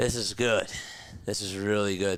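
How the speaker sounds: winded, short of breath, low-voiced. Reacting to a Nationals game as runners reach the corners, out of breath. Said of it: "I'm like out of breath".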